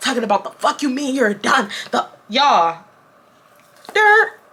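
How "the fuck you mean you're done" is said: lightly sketched, put-on angry screaming man outburst. Telling viewers how a guy reacted on hearing it was over: imitating a man screaming. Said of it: "he starts screaming".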